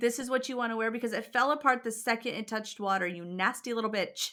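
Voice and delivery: ordinary delivery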